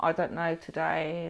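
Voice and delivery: low, slow, drawn-out muttering. Advising on staff training, acting out a downbeat reply to a greeting, imitating someone muttering.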